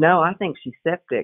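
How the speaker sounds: ordinary talk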